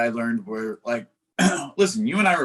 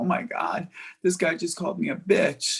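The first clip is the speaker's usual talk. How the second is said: put-on weepy, tearful crying voice; 6 semitones higher than usual. Retelling what a coworker said while crying in the back: imitating someone crying. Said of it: "she's, like, crying".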